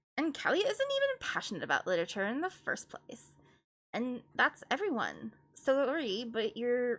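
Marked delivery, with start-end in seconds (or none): 5.6-7.0 put-on Canadian accent slipping in. Performing a character's line, the speaker slips into a canadian accent. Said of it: "Why did I become Canadian?".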